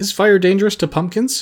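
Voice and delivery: very high, fearful, frightened voice. Jack, hearing the others flee the fire, asks a fearful question. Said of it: "asked Jack fearfully".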